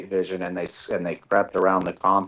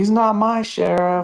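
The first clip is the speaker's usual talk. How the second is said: put-on, very high, shrill crowd-style shout; 14 semitones higher, 4 dB louder than usual. Retelling how he shouted at the sheriff from a rally crowd: retelling his crowd shout. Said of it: "I'm in the crowd shouting".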